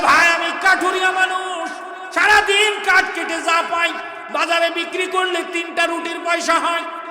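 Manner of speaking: high, loud, impassioned, fervent shout.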